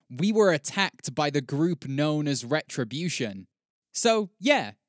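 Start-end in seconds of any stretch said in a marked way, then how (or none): none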